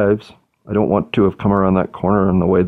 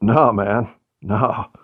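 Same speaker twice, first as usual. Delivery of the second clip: put-on slurred drunk voice; 2 semitones higher than usual. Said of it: "as I can barely fucking stand up".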